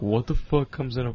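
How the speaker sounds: ordinary delivery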